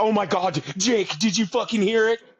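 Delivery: shrill, loud, high, worked-up excited voice. Mocking a ghost show host reacting to a noise: imitating an excited ghost show host. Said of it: "He's like".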